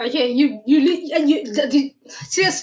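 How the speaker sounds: halting stutter, tripping over words with restarts. Reacting to hearing the exact words his king said last week, stuttering. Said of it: "I'm stuttering".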